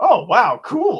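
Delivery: high, loud, excited gushing exclamation.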